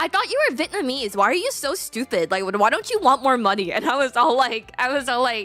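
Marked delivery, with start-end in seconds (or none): 0.0-3.7 blunt, matter-of-fact delivery. Retelling what her mom said on the phone word for word: imitating her mom. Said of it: "my mom straight up goes, word for word".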